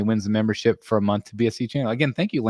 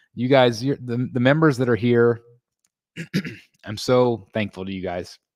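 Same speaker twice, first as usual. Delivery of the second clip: emotional, choked-up voice catching on words. Thanking members for their support, the speaker gets choked up. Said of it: "Sorry, I'm getting choked up".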